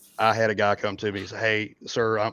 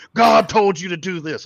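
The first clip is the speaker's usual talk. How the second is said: put-on screaming, higher pitch and louder; 10 semitones higher, 9 dB louder than usual. Retelling how Buck started screaming at him: imitating Buck screaming bloody murder. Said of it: "starts screaming at him, bloody murder".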